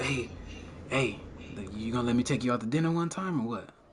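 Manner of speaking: very quiet, real low, hushed sweet murmur. Imitating a friend talking real low to women: imitating Jay talking real low. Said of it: "Jay be talking to him real low".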